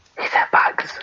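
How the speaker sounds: quiet whispering. Retelling a movie scene, performing a character's whispered line: whispering. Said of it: "she whispers and says".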